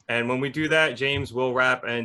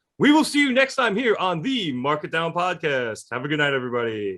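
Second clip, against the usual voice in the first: big, annoying, pitched-up, sing-song announcer voice; 5 semitones higher than usual. Podcast host signing off to viewers, in a big annoying announcer voice. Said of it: "in the big annoying announcer voice".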